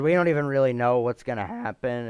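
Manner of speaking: cracking voice. Talking about basketball trades, voice cracking. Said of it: "that's a voice crack".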